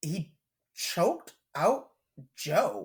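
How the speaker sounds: stunned disbelief, shocked, drawn way out, very slow. Telling another speaker how a wrestler won his match: shocked tone. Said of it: "the tone in my voice is shock".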